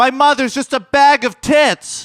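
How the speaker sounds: very high, very loud, drawn-out shrieking scream. Showing how a line gets funny when screamed: screamed very loudly. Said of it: "it was just the fact that you screamed it".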